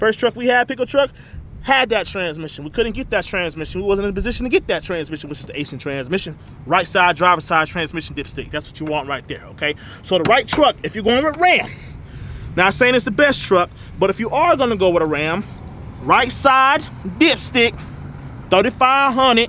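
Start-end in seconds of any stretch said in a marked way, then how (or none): 16.0-19.5 slow, drawn-out country voice. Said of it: "I put my country voice on for that".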